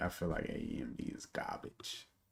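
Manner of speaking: whispered comic character voice, barely voiced. Mid-conversation, the speaker slips into an Ari Spears impression. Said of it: "in my A Ari Spears voice".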